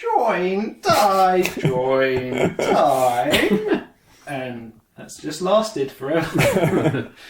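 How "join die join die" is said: very slow, loud, swooping weird creature voice, words stretched. Describing a weird creature, the speaker quotes it in the Master's weird voice. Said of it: "in a really weird voice".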